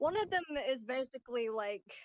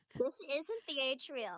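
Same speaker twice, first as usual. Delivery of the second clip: put-on very childish, slow robotic voice. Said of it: "a very childish robotic voice goes".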